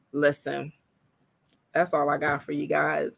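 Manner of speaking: on the verge of crying. Wrapping up a launch party announcement to viewers, holding back tears. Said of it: "I'm not about to cry on here".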